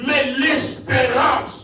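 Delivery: loud, slow shouted emphasis on "espérance".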